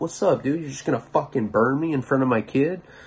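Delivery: wild, crazed, unhinged outburst. Retelling a confrontation with a man who burned him: imitating acting like a psycho. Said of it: "I'm just acting like a psycho".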